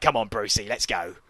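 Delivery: tough, hard-man Cockney geezer accent. Describing how a character called brucey's companion shouldn't sound: tough cockney accent. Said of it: "He's not meant to be all Cockney hard. Like".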